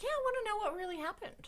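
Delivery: very high, soft, put-on whiny voice. Complaining that a story has no resolution, in a whiny voice. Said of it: "I'm going to talk in this whiny voice".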